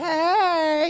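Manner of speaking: high, flirty come-on voice.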